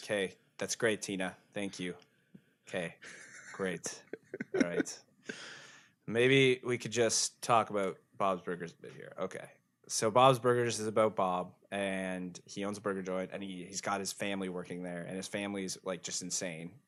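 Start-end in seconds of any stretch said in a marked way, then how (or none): 0.0-5.0 flat monotone, much quieter. Told that Bob is very monotone, the speaker answers Tina in Bob's monotone voice. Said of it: "He's very monotone".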